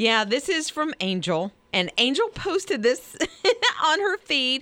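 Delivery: talking through giggles. Speaker explaining who posted a story, laughing while talking. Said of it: "Why are you laughing?".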